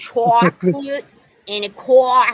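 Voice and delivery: put-on New York accent. Imitating how Michelle says a sentence: Michelle's New York accent. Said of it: "that was very New Yorker".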